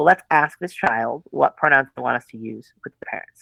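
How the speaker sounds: ordinary talk, nothing marked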